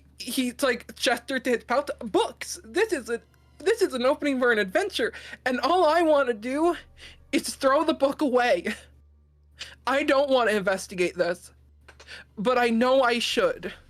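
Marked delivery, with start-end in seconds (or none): 2.0-13.7 character voice crying a little, higher pitch. Voicing Thrux starting to cry a little: Thrux crying a little. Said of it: "Thrux is gonna actively start crying a little bit".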